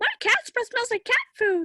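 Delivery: very high, sing-song, swoopy cartoon boy voice. Showing off a cartoon voice she recently learned to do, Ralph Wiggum voice. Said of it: "I recently realized I can do Ralph Wiggum from The Simpsons".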